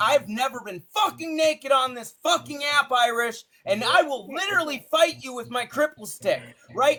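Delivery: angry, high, furious yelling outburst.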